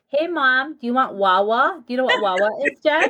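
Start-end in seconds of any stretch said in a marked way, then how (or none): 0.1-1.8 put-on very slow, drawn-out, toddler-style baby talk. Retelling what is still said to a two-year-old: imitating own baby talk. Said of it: "baby talk".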